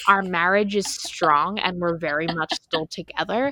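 ordinary talk

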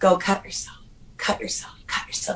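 soft, hushed, urging, repeated whisper. Retelling a voice heard urging self-cutting: imitating a whisper. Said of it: "I would hear a whisper like this".

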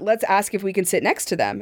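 usual speaking voice

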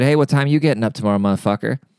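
mock deadpan, straight-faced delivery. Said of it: "said with a very straight face".

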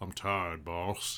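deep voice, calmed down with breath. Showing how to get a voice deep: imitating Michael Clarke Duncan. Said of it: "you gotta pretend you're Michael".

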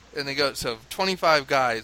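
ordinary talk

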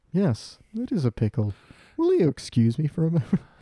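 forced-calm, polite, bottled fury with swooping pitch. Retelling a cartoon scene: imitating Homer Simpson's forced calm fury. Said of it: "fucking furious, but you gotta put on a professional".

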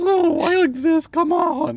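very high, campy put-on voice. In a comedy bit, speaker plays Emily answering a doubter: Emily voice.

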